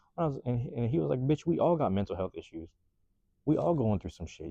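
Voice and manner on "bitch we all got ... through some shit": usual speaking voice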